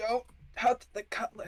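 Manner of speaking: hushed in-character whisper. Voicing a character warning Mako: whispering in character. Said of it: "I whisper to Mako".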